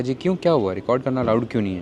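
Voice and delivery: ordinary talk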